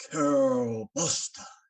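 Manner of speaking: loud, slow booming call. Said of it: "there's this booming voice".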